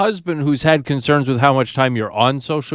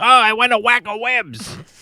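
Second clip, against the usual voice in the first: high, obnoxious cartoon dog voice; 9 semitones higher than usual. Quoting the line he dubbed onto his video, obnoxious Doug-like voice. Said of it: "his cartoon dog voice".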